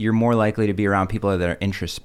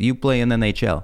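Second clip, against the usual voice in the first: put-on thick Russian accent, higher pitch; 2 semitones higher than usual. Remembering his dad telling him at age three, in a thick Russian accent. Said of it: "my dad going in his thick Russian accent".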